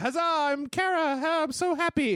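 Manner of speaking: put-on very high, very slow, stretched robot girl voice. Retelling a game trailer where the lady robot spins around: imitating Kara. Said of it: "and she's like".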